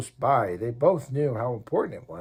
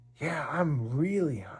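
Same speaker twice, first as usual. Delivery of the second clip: barely voiced, hushed whisper; 3 semitones higher, 4 dB quieter than usual. Reading a story aloud, one character answers another's question in a whisper. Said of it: "Isaac whispered again".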